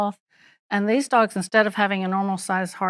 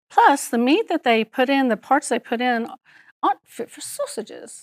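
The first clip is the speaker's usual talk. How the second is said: weak, unconvincing, shaky put-on Scottish accent; 4 semitones higher than usual. Quoting a Scottish veterinarian nutritionist from a lecture: imitating a Scottish accent. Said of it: "which I don't do a very good sau- accent".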